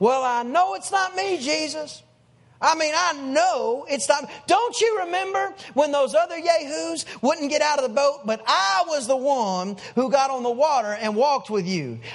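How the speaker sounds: slow, deliberate, unhurried, drawn-out delivery. Retelling Peter's words to Jesus as a quote: Peter's voice. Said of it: "I could just hear Peter".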